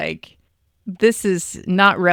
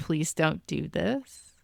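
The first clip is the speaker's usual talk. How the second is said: hushed, begging, pleading half-whispered voice; 11 dB quieter than usual. Describing a dramatic scene where she begs him: imitating a half-whispered plea. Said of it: "she's just whispering like".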